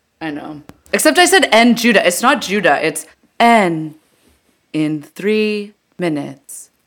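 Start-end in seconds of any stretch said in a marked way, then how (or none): 2.9-6.7 slow, read-out train announcement speaker voice. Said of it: "that is picture perfect Muni".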